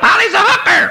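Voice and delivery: squawking parakeet voice.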